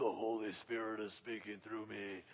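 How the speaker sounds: very deep, low, demonic voice. Demonstrating what believers should not do when speaking: deep voice. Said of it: "get a deep voice and say".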